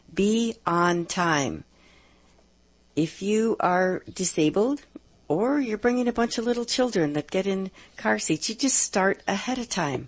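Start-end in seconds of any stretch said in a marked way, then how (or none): 0.1-1.6 slow, deliberate dictation pace like a radio host. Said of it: "So I'll say 'em slowly".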